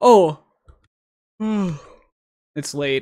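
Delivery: words pushed out while yawning. Late at night while breaking down game film, yawning. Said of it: "I'm yawning".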